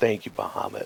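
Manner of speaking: hushed, soft, breathy whisper. A player's character places a hand on the temple statue, whispering. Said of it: "I'm gonna whisper".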